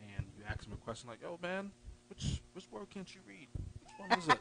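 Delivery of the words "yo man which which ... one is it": high, hushed, discreet stage whisper. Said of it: "you're whispering 'cause you don't wanna embarrass them".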